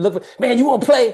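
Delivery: put-on casual New York accent. Reminding Jorge how they first met at the Y, imitating Jorge's New York accent. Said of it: "Jorge got that New York accent".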